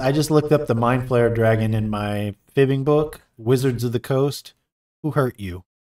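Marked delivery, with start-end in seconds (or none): none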